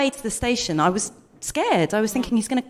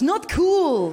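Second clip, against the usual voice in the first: Dutch accent, pitched up; 5 semitones higher than usual. Trying out a line during a vocal challenge: Dutch-sounding accent. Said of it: "It sounds quite Dutch".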